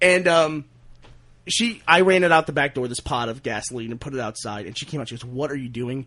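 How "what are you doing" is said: put-on crying voice, quieter. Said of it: "she was just, like, crying".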